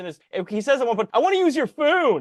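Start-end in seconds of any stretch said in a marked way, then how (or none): 1.1-2.2 higher, put-on Baltimore accent slipping through. Recapping a student film, quoting a guy's line, imitating a Baltimore accent. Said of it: "He says that like fucking Baltimore accent".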